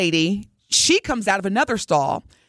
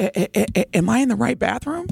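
put-on distraught voice, stammering over the first word; 3 semitones higher than usual. Retelling a stranger's question in a restroom: imitating a distraught woman. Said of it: "And she was distraught".

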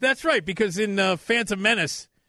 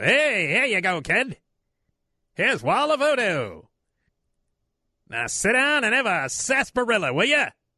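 put-on old-time 1920s carnival barker voice, hawker patter; 3 semitones higher than usual. Speaking to a kid in a comedy bit, in an old-time 1920s barker voice. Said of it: "you sounded like an old-time 20s barker".

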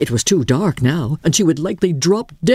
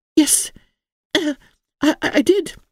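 uncomfortable, uneasy, much higher pitch; 9 semitones higher than usual. A girl answers a horrified man, uncomfortable.

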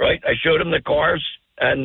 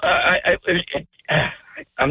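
faltering, half-voiced, choked-up restart with emotion. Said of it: "I'm getting choked up".

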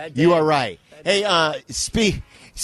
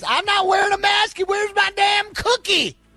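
very high, shrill, cranky, angry Florida voice. Joking about a Florida news story, the speaker does a put-on Florida person voice. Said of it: "Do that voice again, [name]. That was great".

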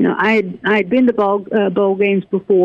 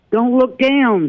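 loud called-out line, yelled; 4 semitones higher than usual. Retelling her own answer to the band member: retelling her own yell. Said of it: "I yelled".

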